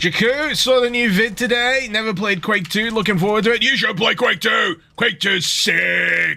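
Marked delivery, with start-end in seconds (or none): 3.6-6.4 hyped, stretched-out monster truck announcer voice. Answering a viewer about a game, in a monster truck announcer voice. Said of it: "I didn't mean to say that in the monster truck announcer voice".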